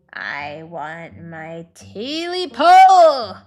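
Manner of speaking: hoarse croaking creature voice. A creature calls out from the darkness: high hoarse croaking voice. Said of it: "A high, hoarse voice croaked from the darkness".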